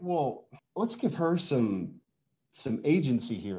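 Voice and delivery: put-on condescending tone.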